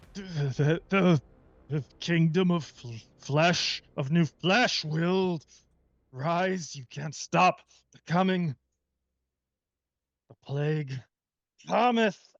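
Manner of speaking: frustrated stammering with grunts. Game master voicing a foe, stammering and grunting in frustration. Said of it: "grunting in frustration, he stammers".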